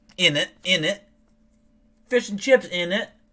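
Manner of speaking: bad put-on British accent. Imitating how people there talk, in a bad british accent. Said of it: "I can't do a good accent".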